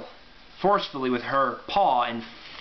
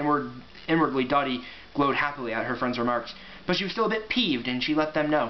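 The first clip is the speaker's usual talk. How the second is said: ordinary delivery, nothing marked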